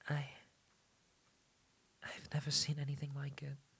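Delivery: hushed, very quiet, trembling, terrified voice. Pressed by the other speaker to talk, answering terrified, voice shaking. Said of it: "Your voice is shaking. You sound terrified".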